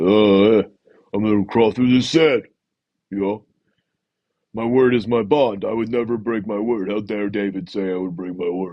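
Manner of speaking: big, dumb, dopey brute voice. Mocking a contestant likened to a big dumb ant: imitating Joe. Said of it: "That's Joe. You know, he's like".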